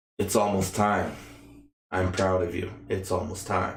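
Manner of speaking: dark, foreboding, ominous voice. Voicing the telepathic voice the listener hears in their head, dark and ominous. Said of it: "a dark, ominous voice kind of in your head".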